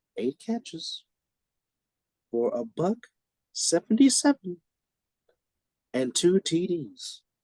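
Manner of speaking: very slow, deliberate, broken-up halting delivery. Sports recap, stressing one line for listeners: said very slowly. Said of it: "I'm going to say this very slowly".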